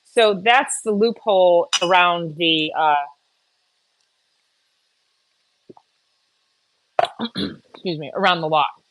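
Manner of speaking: talking while chewing, mouth full of ice. Explaining how the class works, talking while chewing a piece of ice. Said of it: "chewing a piece of ice there".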